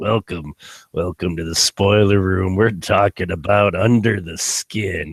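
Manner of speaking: put-on lecherous voice. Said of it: "to talk in my lecherous voice all episode".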